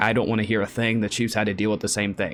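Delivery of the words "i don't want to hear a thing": plain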